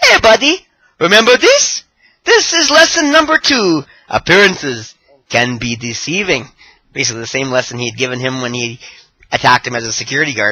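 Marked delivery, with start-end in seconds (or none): 0.0-6.5 put-on smug, loud, swooping Japanese accent. Retelling Tozawa's taunt to Kendrick on the mic, in Tozawa's mock-smug Japanese voice. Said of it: "in his smug, entertaining Japanese voice".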